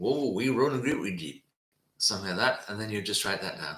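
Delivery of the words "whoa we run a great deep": put-on Cornish accent. Imagining what the sailors answered about the shipwreck: Cornish accent. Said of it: "in a good Cornish accent".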